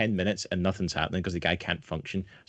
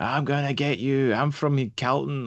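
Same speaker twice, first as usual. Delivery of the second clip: put-on aggressive, high, slow, drawn-out threatening shout; 5 semitones higher, 3 dB louder than usual. Retelling a man on the bus shouting threats: imitating someone shouting. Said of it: "he just started shouting at me".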